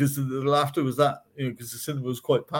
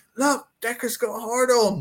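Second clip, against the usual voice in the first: blurted, high, drawn-out shout; 8 semitones higher than usual. Retelling a mate shouting out in a quiet cinema: imitating Adrian shouting. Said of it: "He shouted that out".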